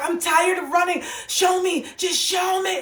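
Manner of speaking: play-acted, slow, very high, drawn-out pleading scream. Retelling a night tossing and turning in bed, reenacting desperate screaming. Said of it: "and I was screaming".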